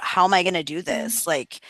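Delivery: put-on stressed, panicked voice. Retelling feeling stressed about moving, retelling own stressed panic. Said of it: "huge, like, surge of".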